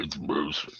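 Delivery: hushed, breathy whisper. Retelling a wrestling storyline, then saying the line in Moose voice. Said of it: "Let me say it in Moose's voice".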